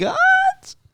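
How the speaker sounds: rising question-like lift on gods. Saying a book title as a question, rising inflection on gods. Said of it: "Gotta have an upward inflection".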